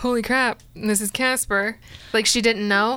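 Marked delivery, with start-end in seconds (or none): none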